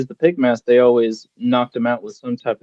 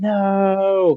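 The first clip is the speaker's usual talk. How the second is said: high-pitched yelling. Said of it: "Adam's yelling".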